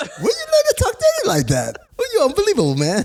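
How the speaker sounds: mock high-pitched voice. Repeating a line someone just said, imitating a high-pitched voice. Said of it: "his voice goes up high-pitched".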